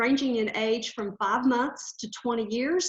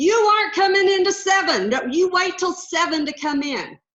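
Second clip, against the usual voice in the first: loud, high-pitched screaming yell; 6 semitones higher, 7 dB louder than usual. Recalling yelling out the window at an early grocery driver: retelling her own yell.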